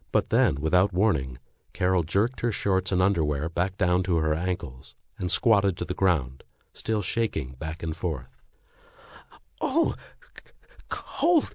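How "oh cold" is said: very high gasp with chattering teeth. A woman squatting down cries out, gasping between chattering teeth. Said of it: "she gasped between chattering teeth".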